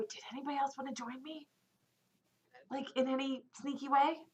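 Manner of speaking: speaking in a whisper. Before heading over, asking the others whether anyone will join, whispering. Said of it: "I'm gonna whisper before I go".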